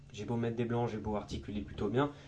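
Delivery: toneless, level, flat robotic monotone. Explaining why to vary your tone, showing the opposite: flat monotone. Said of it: "si jamais je parle tout le temps comme ça ... on dirait un robot ... Il a aucun ton".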